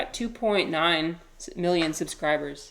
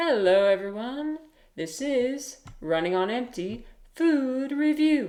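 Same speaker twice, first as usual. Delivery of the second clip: slow, drawn-out delivery with raised pitch; 7 semitones higher than usual. Showing how a fast food reviewer always opens his videos: imitating Report of the Week. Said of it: "So he's always like".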